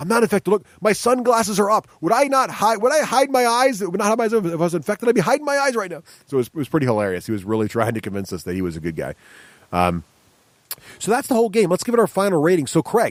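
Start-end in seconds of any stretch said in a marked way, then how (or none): 0.0-6.0 very high, earnest, insistent protesting voice. Retelling how a player denied being infected: imitating Ben insisting. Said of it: "Ben's sitting there going".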